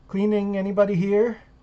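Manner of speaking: mild, unassertive, gentle, high calling voice. Retelling how cleaners called into the bathroom: imitating someone speaking softly. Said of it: "real soft, real quiet".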